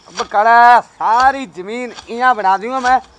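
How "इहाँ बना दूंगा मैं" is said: ordinary delivery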